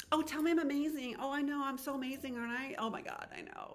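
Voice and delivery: high, needy, preening tone. Describing what not to be, imitating someone fishing for compliments. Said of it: "you're not looking for".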